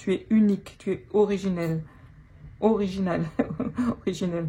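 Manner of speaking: stumbling, self-correcting between originel and original. Reading out what a card means for someone, stumbling over words. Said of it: "je bafouille".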